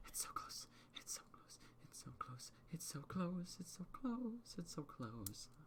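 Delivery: barely audible whispering, repeated over and over. Voicing the room the players are in, which whispers: whispering. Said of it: "the room whispering".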